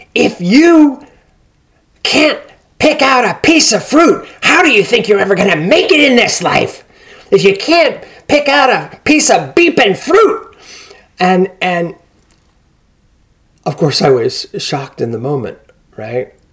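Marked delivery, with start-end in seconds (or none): 0.2-10.6 very high-pitched, shrill screaming rant. Retelling what a woman screamed in a supermarket: imitating a woman screaming. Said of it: "but she just screams and she says".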